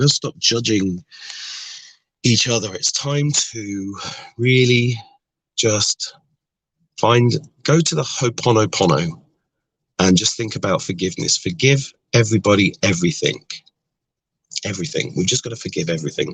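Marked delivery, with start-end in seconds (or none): 11.4-16.4 fast outpouring, voice full of emotion. Urging listeners to forgive everyone and everything, a bit emotional. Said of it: "Sorry, a bit emotional".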